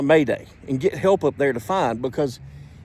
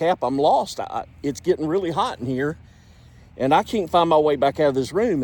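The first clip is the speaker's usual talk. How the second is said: usual speaking voice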